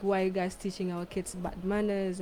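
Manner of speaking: usual speaking voice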